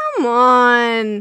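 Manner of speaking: loud, exasperated, worn out, drawn-out ending. Speaker voicing a squealing female fed up with a male: imitating exasperation. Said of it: "I can hear the exasperation in her voice".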